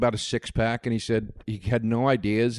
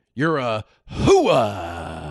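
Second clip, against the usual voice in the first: loud, swooping put-on voice, drawn-out hooah; 5 dB louder than usual. Doing an impression of Al Pacino in Scent of a Woman. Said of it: "That's my impression of Al Pacino in Scent of a Woman".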